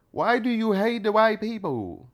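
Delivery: exaggerated Vietnamese accent. Speaker repeats someone's question in a Vietnamese-sounding accent.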